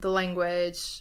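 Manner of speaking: stress on final syllable of "language", stretched, slow. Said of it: "Listen to the way she says it".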